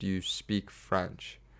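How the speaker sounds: very broken, halting English of a foreign speaker. Retelling how a woman on a ladder asked him a question: imitating very broken English. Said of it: "very broken English".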